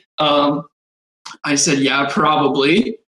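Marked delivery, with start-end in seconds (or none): 1.8-2.9 put-on sarcastic tone. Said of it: "extremely, I wanna say, sarcastic fashion".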